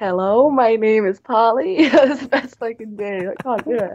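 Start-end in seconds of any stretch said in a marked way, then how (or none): 0.0-1.9 halting, slow, put-on American accent. Asked by a co-speaker to try an american accent: attempted american accent. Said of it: "can you do an American accent?".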